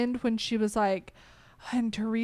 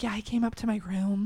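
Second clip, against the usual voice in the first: put-on whisper. Retelling what Teresa said about a man coming to her room: imitating someone whispering.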